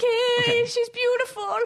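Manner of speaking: play-acted weepy, tearful, very high-pitched voice. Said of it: "'cause I'm crying".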